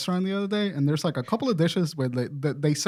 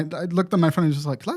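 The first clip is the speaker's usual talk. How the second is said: ordinary talk, nothing marked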